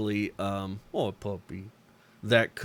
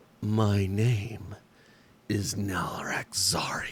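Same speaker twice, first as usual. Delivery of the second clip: put-on reptilian female creature voice. Narrating a game scene, voicing a creature coiled around a stalagmite: reptilian female voice. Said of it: "you hear a reptilian female voice call out".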